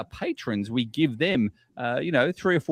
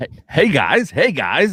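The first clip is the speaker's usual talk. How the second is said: unhurried, loud, drawn-out host voice; 3 semitones higher, 8 dB louder than usual. Greeting listeners while imitating Scott Burks. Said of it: "that was my Scott Burks".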